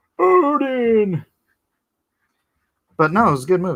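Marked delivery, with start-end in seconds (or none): 0.2-1.3 high, loud, repeated shouting. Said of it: "they just kept shouting".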